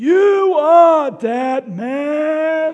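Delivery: put-on shrill, booming old New York accent, man drawn out. Retelling how Pa Grape voiced Nathan, in Pa Grape's elderly Southside New York accent. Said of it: "in his elderly Southside New York accent".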